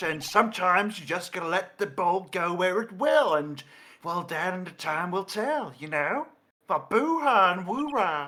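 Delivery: put-on British Texan accent. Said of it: "bad feeling about this man's accent".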